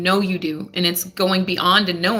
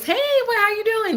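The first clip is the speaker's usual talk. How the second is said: mock-cheerful put-on voice, much higher. Speaker tells Libras how they answer a caller, mock-cheerful greeting. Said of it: "in your little cheerful Libra voice".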